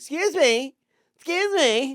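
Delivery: very high, shrill, drawn-out, grating woman's voice. Retelling a woman calling after them in the hallway, imitating a grating female voice. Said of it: "that fucking grating".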